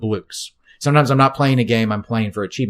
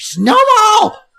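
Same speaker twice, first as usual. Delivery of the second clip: shrieking, screeched word; 8 dB louder than usual. Showing how they call out Snowball, not calmly: screeched Snowball. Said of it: "I don't say it calmly. I screech it".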